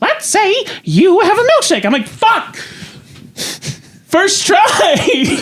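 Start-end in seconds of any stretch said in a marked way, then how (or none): 0.0-1.8 swooping cartoon mouse character voice. Trying a There Will Be Blood monologue as a cartoon: Mickey Mouse voice. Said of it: "I'm just gonna try Mickey Mouse".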